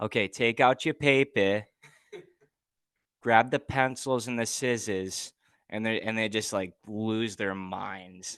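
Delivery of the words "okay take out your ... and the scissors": put-on Boston accent, slower. Showing how the speaker addresses the group, in a Matt Damon Boston accent. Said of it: "I'll come out with like a good Boston accent".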